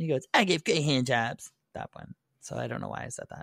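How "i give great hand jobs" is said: imitated cartoon kid voice. Recounting a scene from a cartoon show, doing the Cartman voice. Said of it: "where Cartman goes".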